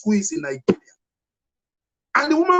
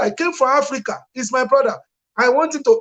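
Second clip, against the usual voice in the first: plain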